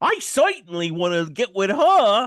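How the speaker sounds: very loud, high, put-on 1930s New York accent. Imitate a guy whose accent was really out of place, in a put-on 1930s new york accent. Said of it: "really out of place nineteen thirties New York accent".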